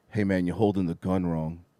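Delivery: hushed, soft half-whisper. Retelling what a basketball player came back and said to him, half-whispering. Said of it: "he just whispers to him".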